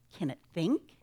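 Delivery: ordinary delivery, nothing marked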